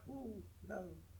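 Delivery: soft, squeaky, high voice.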